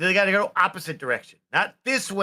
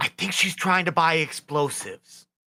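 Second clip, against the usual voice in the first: quiet half-voiced stage whisper. In a role-play shop scene, warning the shopkeeper about a friend, in a stage whisper. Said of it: "like that quiet whisper".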